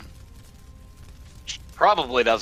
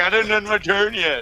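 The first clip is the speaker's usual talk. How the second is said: high-pitched, loud, smug and self-satisfied tone. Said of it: "I was about to be that total prick".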